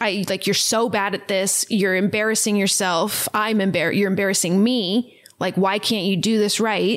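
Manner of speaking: normal talking voice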